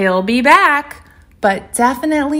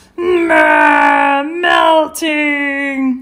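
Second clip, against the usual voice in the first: high, cranky, grumpy, grouchy growl; 5 semitones higher than usual. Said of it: "some good growls in there".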